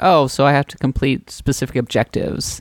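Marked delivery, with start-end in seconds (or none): none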